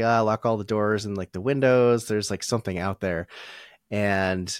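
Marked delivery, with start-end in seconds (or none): none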